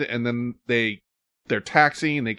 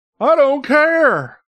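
very high, loud, squeaky attempt at a voice; 14 semitones higher, 7 dB louder than usual. Retelling a movie scene's last lines: bad Tommy Lee Jones impression. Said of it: "That's not a good impression".

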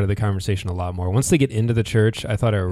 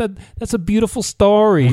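put-on high, over-the-top, almost obnoxious New York accent; 12 semitones higher, 5 dB louder than usual. Describing a girl in a story, the speaker mimics her total New York accent. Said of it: "the total New York accent".

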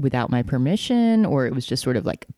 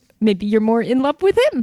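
put-on very high, raised voice with Minnesota accent; 9 semitones higher, 4 dB louder than usual. Repeating own words from a moment ago: Frances McDormand Fargo voice. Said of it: "Totally sounded like her".

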